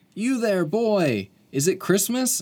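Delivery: very high, excited, acted-out yell. Retelling a movie scene, the speaker quotes a man at the window calling to a boy: imitating someone yelling. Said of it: "he yells".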